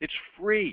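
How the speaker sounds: drawn out, slow, loud, deliberate, every word weighed. Telling the audience about a free phone-in service: said slowly. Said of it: "I'm going to say this slowly".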